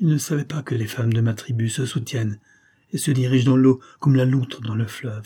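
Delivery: plain reading voice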